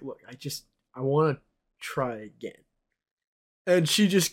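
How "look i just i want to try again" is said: put-on near-tearful stammering, nearly crying, quieter. Retelling asking her for a second chance: imitating nearly crying, stammering. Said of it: "I was nearly crying".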